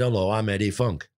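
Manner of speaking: put-on northern English Lancashire accent. Retelling how a man first introduced himself, imitating Eddie Funk's Lancashire accent. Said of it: "he had that Lancashire accent".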